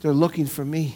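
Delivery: whispered put-on child voice. Retelling a joke about a child on the phone: imitating Johnny whispering. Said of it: "still whispering".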